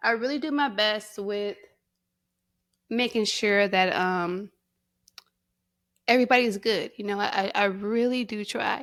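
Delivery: fighting tears, trying not to cry. Speaking openly to listeners about doing their best, holding back tears. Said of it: "I'm trying not to cry".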